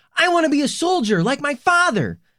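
put-on very high, sudden child's shout. Narrator reading a boy's line as the captain reads the letters, sudden shout. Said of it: "suddenly shouts out".

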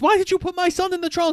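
outraged high fast voice.

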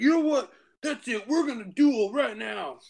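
put-on very high, boozy, drunken voice. Retelling a drunk man challenging the speaker to a duel, imitating a drunk man. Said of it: "he's so drunk".

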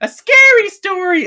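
put-on very high, small child's piping voice. Describing an opening scene where a little kid asks for a story: imitating a little kid's voice. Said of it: "I'm not even exaggerating the voice".

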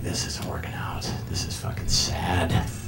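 soft, hushed, unvoiced inner whisper.

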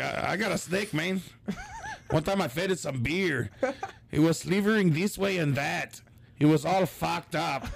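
put-on Mexican accent, pitched high. Retelling a bit from an old cd, in a put-on mexican accent. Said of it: "Why do you sound Mexican?".

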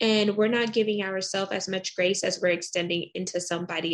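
ordinary delivery

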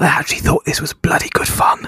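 hushed, quiet whisper. Asked what they thought of a film, answering in a quiet whisper. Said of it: "I'll whisper it quietly".

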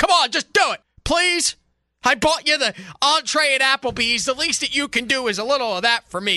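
exasperated pleading, pitched high, at the end of patience. Frustrated because his girlfriend won't do it for him: yelling in frustration. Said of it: "I'm yelling because I'm frustrated".

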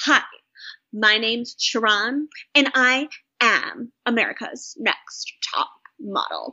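slow, deliberate, every word spaced out. Retelling a contestant introducing herself to each judge: imitating Sharon. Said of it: "Can I please do it?".

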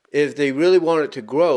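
normal talking voice

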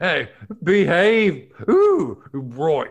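very loud, swooping, failed Scottish accent attempt. Challenged to do several Scottish accents, the speaker tries one; attempted Scottish accent. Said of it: "Next Scottish".

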